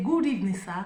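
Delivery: ordinary talk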